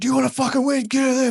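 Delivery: put-on shrill, aggressive, very high screaming. Retelling the preacher in his corner during a fight: imitating a screaming preacher-cornerman. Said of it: "Screaming at me".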